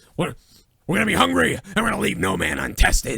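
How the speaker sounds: put-on wrestling promoter voice. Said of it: "Vince probably came up with that".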